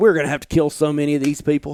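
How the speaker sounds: ordinary delivery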